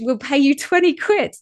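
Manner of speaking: mock yelling. Retelling a crew member calling up into the crowd: imitating someone yelling. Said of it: "sort of yelled up into the crowd".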